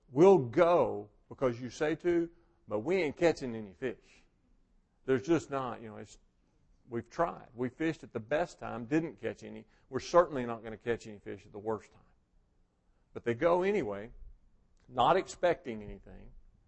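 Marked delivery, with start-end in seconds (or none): none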